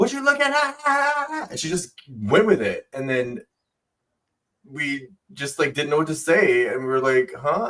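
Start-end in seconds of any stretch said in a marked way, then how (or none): 0.0-1.5 very high, cross, drawn-out, acted angry tone. Retelling what a woman snapped at the speaker's group, imitating her angry question. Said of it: "And she was like mad".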